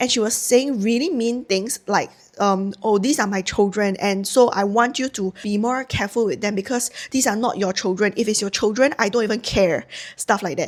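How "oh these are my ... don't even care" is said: ordinary talk, nothing marked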